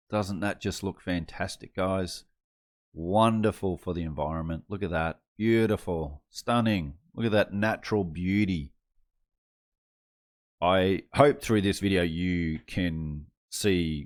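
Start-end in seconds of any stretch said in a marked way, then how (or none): 0.1-8.7 ironic, sarcastic admiring tone. Showing a picture of an electric car cemetery: sarcastic. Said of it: "hear my sarcasm in my voice".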